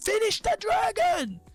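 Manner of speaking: mock very high screamed call. Acting out Rek'Sai's call while reviewing a fight: imitating someone screaming. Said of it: "He's screaming".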